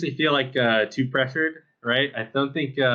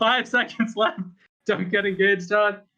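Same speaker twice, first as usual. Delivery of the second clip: mock yell, higher; 7 semitones higher than usual. Retelling a teammate's callout near the end of a game: imitating a teammate yelling. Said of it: "he's just yelling".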